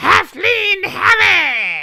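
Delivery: very high, very loud, shrill, booming battle cry. Voicing a halfling jester on a table: shouting in character. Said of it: "and he shouts".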